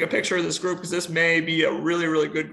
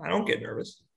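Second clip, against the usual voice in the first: mock flat deadpan delivery, quieter; 5 dB quieter than usual. Retelling a player's answer to whether he was nervous: imitating a deadpan reply. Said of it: "said it just kind of deadpan".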